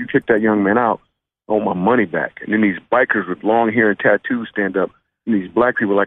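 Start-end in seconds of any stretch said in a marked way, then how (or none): none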